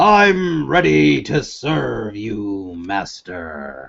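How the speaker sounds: grand, massive, proclaiming giant's voice. Narrating a voice from the north that proclaims to the players; deep massive voice. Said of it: "a deep, massive voice, proclaims".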